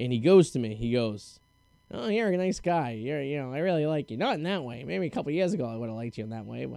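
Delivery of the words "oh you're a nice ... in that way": fast, rattled-off character voice. Retelling what a man said when the speaker called in unable to work, imitating how he talked. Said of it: "and he talked like this".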